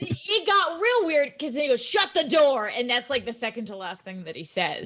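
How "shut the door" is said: mock bossy, high, shrill, barked yell. Retelling a cartoon's ending, imitating King Koopa yelling. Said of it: "He's, like, yelling".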